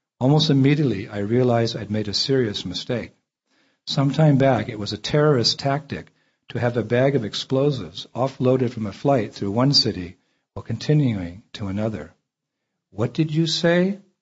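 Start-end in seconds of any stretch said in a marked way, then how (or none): 12.9-14.0 put-on wary, distrustful tone, pitched up. Retelling what a woman asked after hearing about his bags, mock-suspicious question. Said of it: "She said suspiciously".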